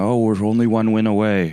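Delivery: put-on high, weepy, overjoyed gushing. Retelling a fan filming himself at a game: imitating crying tears of joy. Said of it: "crying tears of joy".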